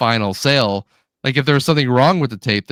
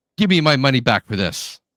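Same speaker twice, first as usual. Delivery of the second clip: acted furious, fast, angry delivery. Retelling what a man storming up to the table demanded; imitating an angry demand. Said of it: "he comes storming in".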